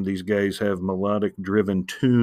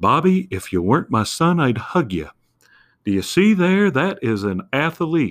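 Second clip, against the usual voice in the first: bad character voice, high, swooping, sing-song; 6 semitones higher, 4 dB louder than usual. Speaker explaining why a show felt relatable, doing a bad Hank Hill impression. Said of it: "I felt like I could do Hank Hill's voice".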